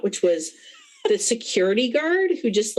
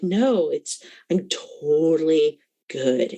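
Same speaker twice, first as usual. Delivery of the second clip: put-on very calm voice, lower pitch; 4 semitones lower than usual. Imitating a creepy security guard insisting he is fine: imitating someone acting very calm. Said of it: "when somebody's just very calm".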